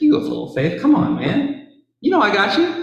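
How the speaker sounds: play-acted warm teasing, very high and swooping. Imagining the scene, the speaker voices Jesus reassuring a doubter: warm Jesus impression. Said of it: "and Jesus said warmly".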